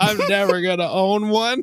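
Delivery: acted high sobbing wail, words cried through sobs. Telling a story about crying over a Nintendo, acting out their past self: imitating own sobbing. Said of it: "I was just like sobbing".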